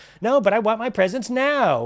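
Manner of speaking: put-on high spoiled-kid voice. Mocking a wrestler's reaction to her match being called off, imitating a spoiled kid on Christmas. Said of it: "spoiled kid on Christmas".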